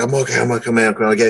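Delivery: put-on mumble. Retelling answering the other wrestler mid-match: imitating own mumble. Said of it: "I just kinda mumbled".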